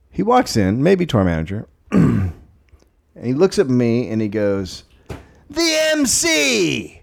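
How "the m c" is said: screaming high and slow. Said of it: "Screams it, not, like, quietly".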